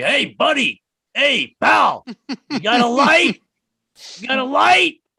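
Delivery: put-on very high, raspy, drawn-out old-timer gangster voice. Describing old ex-mafioso types, the speaker imitates them in a raspy old-timer voice. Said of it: "they've all got those raspy voices".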